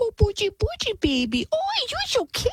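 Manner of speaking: put-on very high-pitched, doting, cooing baby talk. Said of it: "the mom is like".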